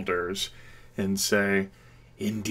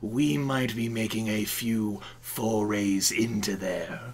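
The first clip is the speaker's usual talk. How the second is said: oily, sleazy voice. Voicing Rillandin answering about the fungal jungle: sleazy voice. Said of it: "I'm getting a little tired of this sleazy voice".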